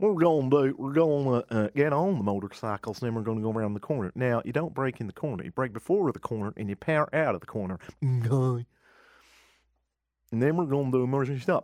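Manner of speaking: put-on Deep South North American accent. Imitating a motorbike instructor's instructions: put-on North American accent. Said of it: "my sort of standard, um, North American accent".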